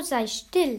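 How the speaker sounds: calling out. A character interrupts the other's speech, calling out. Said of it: "rief Mathilda".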